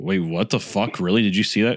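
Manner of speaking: ordinary talk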